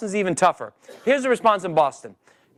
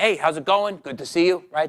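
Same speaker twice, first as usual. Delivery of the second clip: put-on friendly New York accent; 2 semitones lower than usual. Demonstrating meeting someone at a party in new york, in a new york accent. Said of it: "I'm going to do the New York accent".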